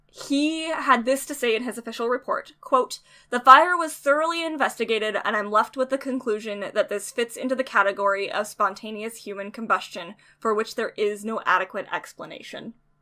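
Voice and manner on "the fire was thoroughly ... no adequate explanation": normal talking voice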